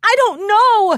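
high, loud, scared, frightened whimpering. Reading a story as a monster attacks, Dandy Grandeur whimpering. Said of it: "Dandy Grandeur whimpered".

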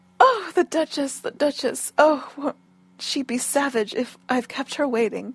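ordinary delivery

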